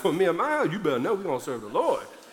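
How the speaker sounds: put-on firm, fast Cajun accent with Southern attitude. Acting out what a leader told the people, retelling with Southern attitude. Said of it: "I feel like he got a little Southern attitude".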